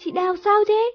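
very high, frightened, panicked cry of alarm. Rushing out of the house to check on someone, asking in panic. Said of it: "hốt hoảng hỏi".

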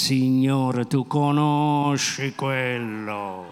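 feigned clenched-teeth speech. Speaker acting out his own prayer to the Lord, said through gritted teeth. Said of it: "a denti stretti".

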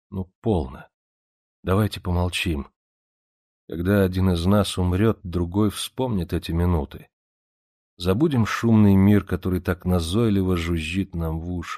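ordinary delivery

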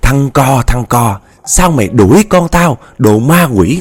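put-on screaming. Telling listeners how a woman cried out to the whole neighborhood, retelling a scream for help. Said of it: "Chị la làng la xóm là chị kêu".

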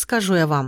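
usual speaking voice

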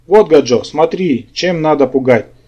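plain

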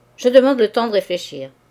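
curt, dry voice. Narrator reads Duroy answering the notary: curt, dry tone. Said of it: "d'un ton sec".

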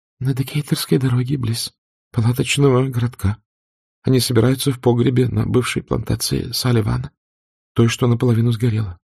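steady yet quavering voice. Freeing herself from his supporting arm, a woman answers him in a calm but trembling voice. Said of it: "спокойно, хотя и дрожащим голосом сказала".

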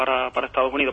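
ordinary talk

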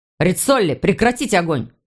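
plain

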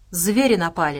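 plain

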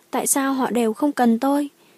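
plain

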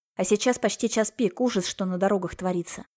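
ordinary delivery

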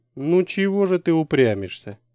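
gently chiding, lightly reproachful, almost tender. A handsome man to a girl who shakes her head, almost tender, slightly reproachful. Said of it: "Почти нежно, с немного осуждающими интонациями".

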